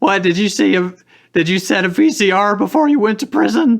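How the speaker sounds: very high, loud squeaky guy voice. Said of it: "that's my squeaky voice guy".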